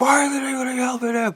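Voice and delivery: reenacted scream. Retelling screaming at Jasmine in a vision: retelling own scream. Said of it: "I screamed at Jasmine".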